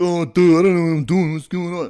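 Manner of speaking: very high, loud, breathed-out, goofy dopey voice. Showing the voice used to repeat what a bully said, Patrick voice. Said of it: "that's Patrick".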